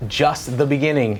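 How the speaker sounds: ordinary talk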